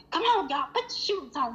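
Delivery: contained, hurried yelling. A parent recalls hurrying the kids along, retelling yelling at the kids. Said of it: "I'm yelling at the kids".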